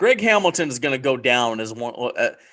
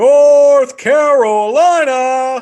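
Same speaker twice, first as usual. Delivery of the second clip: high, shrill, booming ring-announcer call, "Carolina" stretched long; 12 semitones higher, 10 dB louder than usual. Showing how the ring announcer says it: Justin Roberts ring announcer voice. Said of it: "he gives a little bit more nor on the north".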